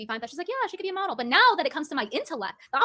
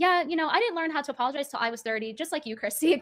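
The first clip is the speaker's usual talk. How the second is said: usual speaking voice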